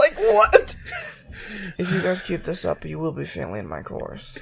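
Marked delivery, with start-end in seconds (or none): 1.8-4.4 mock whispered menace, lower and quieter. Imitating the teacher from a video: imitating a teacher's whispered veiled threat. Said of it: "everything this teacher says is in a whispered tone and sounds like a veiled threat".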